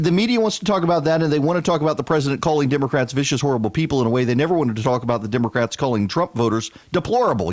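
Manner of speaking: rushed, fast, worked-up, wound-up delivery. Talking to an audience about the news, speaking fast and wound up. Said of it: "I'm talking fast. I'm wound up".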